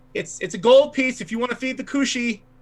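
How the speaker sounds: high-pitched shouting. Voicing a character who runs off and shouts back: shouting out while running away. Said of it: "he shouts out".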